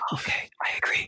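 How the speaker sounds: hushed, secretive whisper. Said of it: "you gotta keep your voice down".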